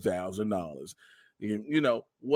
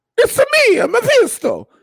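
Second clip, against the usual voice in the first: cartoon Italian accent, much higher and louder; 16 dB louder than usual. Voicing the co-host's line in a podcast bit, Mario voice. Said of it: "I don't know why I did Mario".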